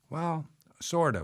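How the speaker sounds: mumbled. The narrator answers a woman who mentions her ex-husband, mumbling. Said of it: "I mumbled".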